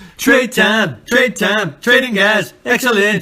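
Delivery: very high, warbling, whammy-pedal wail like injured dog. Chatting about a league with others, doing a whammy-pedal imitation like an injured dog. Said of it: "You sound like an injured dog".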